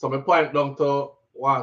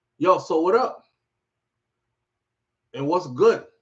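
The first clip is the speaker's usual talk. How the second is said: put-on Brooklyn-style New York accent, slangy; 3 semitones higher than usual. Retelling a man who switched into a new york accent: imitating a new york accent. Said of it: "He start talk like a New York him come from".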